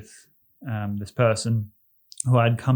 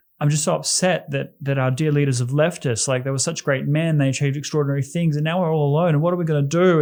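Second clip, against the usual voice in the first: breathless, high, rushed, hysterical crying and sobbing ramble; 5 semitones higher, 3 dB louder than usual. Retelling what a woman said when asked why she was crying, imitating hysterical crying. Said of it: "started falling into hysterics as she spoke".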